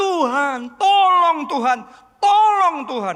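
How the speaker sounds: desperate pleading cry, very high-pitched. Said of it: "dia berseru".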